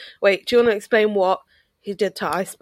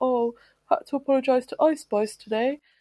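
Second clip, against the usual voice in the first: put-on meek, sheepish, self-deprecating tone, high-pitched; 5 semitones higher, 3 dB quieter than usual. Retelling a video of a man at a gig apologising: imitating someone speaking sheepishly. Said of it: "he comes on really sheepishly and he's like".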